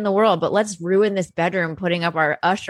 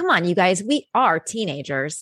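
mocking, stiff, fake-cool teen voice. Mocking badly written teen dialogue in a movie: imitating adults writing kid dialogue. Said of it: "they're just like".

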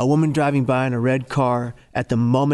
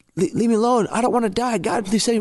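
very high, tearful, crying outcry; 10 semitones higher than usual. Speaker retelling what they yelled out loud on the bus, reenacting the yelling. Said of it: "I had yelled on the bus".

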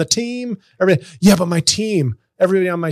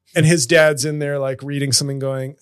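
plain

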